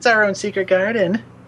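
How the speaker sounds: put-on high, dreamy girl character voice.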